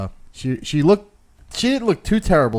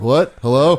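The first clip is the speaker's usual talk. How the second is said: mocking confused voice, louder; 5 dB louder than usual. Retelling how the caller sounded on the bad phone line: imitating Garrett. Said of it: "And then you went".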